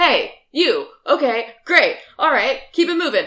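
loud yelling, pitch rising. A player's character moves into a casino crowd, yelling like staff. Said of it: "I just start like yelling at people like I work there".

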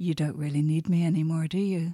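plain

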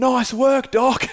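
put-on very high-pitched, drunken holler. Retelling what a drunk friend yelled from the van: imitating a drunk yell. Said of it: "he yells out".

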